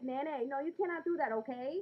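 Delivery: put-on Bronx way of talking, high and slow. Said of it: "¿Tú quieres que yo empiece a hablar así".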